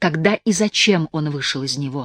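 ordinary delivery, nothing marked

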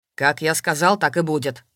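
threatening voice. Vorontsov cuts off her attempts to object, speaking menacingly. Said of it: "грозно произнес Воронцов".

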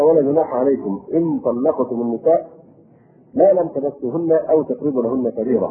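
ordinary talk, nothing marked

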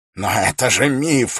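crying out in disbelief, slow, drawn-out. Narrator reads a man reacting to being introduced to someone, exclaiming. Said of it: "воскликнул Феррис".

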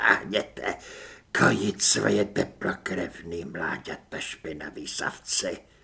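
hissing. Narrator reading the doppelganger's last words from the floor, hissing. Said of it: "zasyčel".

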